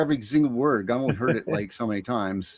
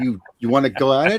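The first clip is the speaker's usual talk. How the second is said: put-on joking, confrontational tone; 2 semitones higher, 3 dB louder than usual. Acting out a typical reply to an angry person: imitating a joking fight challenge. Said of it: "make jokes while we try to fight with people".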